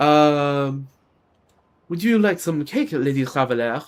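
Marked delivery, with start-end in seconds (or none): 1.9-3.8 put-on French accent. Showing they can kind of do an accent, in put-on french accent. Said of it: "See, I can kind of do a French accent".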